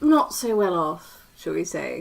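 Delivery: very patronizing, condescending, snooty insinuating tone. In character, asking two companions about their money: very patronizing tone. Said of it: "She says in a very patronizing tone".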